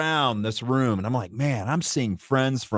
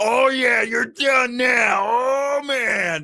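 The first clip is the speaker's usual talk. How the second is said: mock very high, slow, drawn-out carrying holler; 11 semitones higher, 3 dB louder than usual. Retelling a friend yelling while everyone talks: imitating Mark Moses yelling. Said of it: "Moses is yelling".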